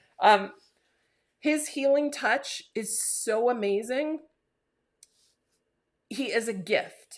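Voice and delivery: teary-eyed. A parent speaking about a son, getting teary. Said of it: "I'm get all teary here".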